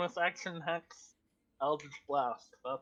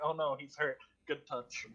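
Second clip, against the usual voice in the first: usual speaking voice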